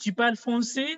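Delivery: pitch climbs through français, rising tune. French lesson on asking a question: rising intonation on français. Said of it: "So you can hear that it is a rising intonation".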